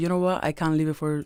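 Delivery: normal talking voice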